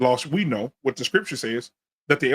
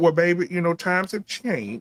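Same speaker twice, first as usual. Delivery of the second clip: put-on little grandma voice; 4 semitones higher than usual. Retelling grandma's answer after the speaker asked her for help, little grandma voice. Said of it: "that little grandma voice".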